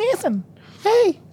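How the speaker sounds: very high, squeaky fairy-like voice. Calling out a person's name as a joke: Navi impression. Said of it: "It's my Navi impression".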